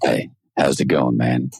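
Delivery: very close-mic, lips right on the mic. Teasing a co-host about leaning close to the mic: imitating a close-mic voice. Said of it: "did you have to get, like, that close to the mic".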